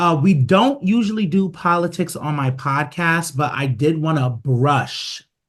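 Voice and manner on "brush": brush stressed and stretched out slowly. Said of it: "emphasis on brush".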